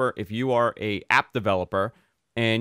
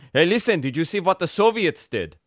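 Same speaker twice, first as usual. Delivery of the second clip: weird fake German accent, higher; 5 semitones higher than usual. Imitating a father who asks about the Soviets, weird fake German accent. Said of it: "He has a weird German accent".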